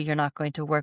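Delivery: ordinary talk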